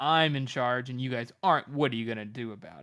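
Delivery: ordinary talk, nothing marked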